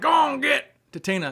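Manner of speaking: very high, rough and angry voice. Quoting a man who talks like Foghorn Leghorn, Foghorn Leghorn impression. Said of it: "He even says like".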